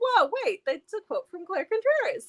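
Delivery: surprised double take.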